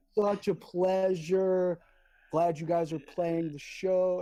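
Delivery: very slow, drawn-out words. Retelling the band's drummer greeting Chris; imitating George talking slow. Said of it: "why are you talking slow for?".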